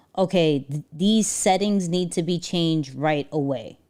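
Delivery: ordinary talk, nothing marked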